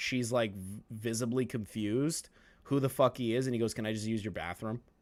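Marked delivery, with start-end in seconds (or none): 3.7-4.8 put-on offhand, matter-of-fact, nonchalant casual tone. Retelling what he asked at her door: imitating a nonchalant ask. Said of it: "Just very nonchalantly".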